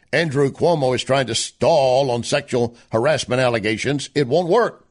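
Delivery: normal talking voice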